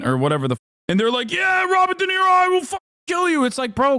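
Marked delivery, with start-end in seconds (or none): 1.3-3.4 mock angry, furious tone, higher. Imitating an angry voter threatening Robert De Niro: imitating a furious voter. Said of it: "why are you so mad?".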